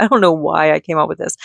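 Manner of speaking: ordinary talk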